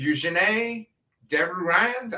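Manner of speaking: fumbled French pronunciation of name. Trying to pronounce the lead actress's name: attempted French accent. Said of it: "that's what my French accent".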